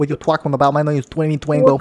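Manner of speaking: fake, put-on Brooklyn New York accent. Joking about a podcast character, giving his name: put-on Brooklyn accent.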